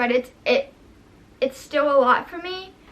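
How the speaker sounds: crying while talking, tearful. Telling viewers about putting a cat down, crying while talking. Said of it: "I can't believe I'm crying again on camera".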